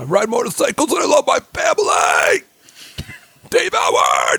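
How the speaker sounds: very high, swooping, slow sing-song drawl. Mocking someone the talk names, doing an impression of Dave Howard. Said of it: "that is what he sounds like".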